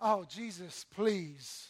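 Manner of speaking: dismissive, scornful, sneering scoff. Acting out the money-loving Pharisees scoffing at Jesus: mock-sneering. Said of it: "were sneering at Jesus. Here's what that looked like".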